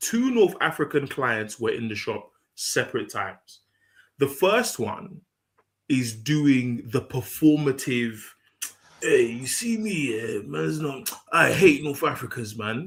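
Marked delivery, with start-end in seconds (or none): 9.0-12.9 put-on road-man voice. Telling a story about a client in the shop, imitating his road voice. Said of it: "You sound like Mo Gilligan doing the road voice".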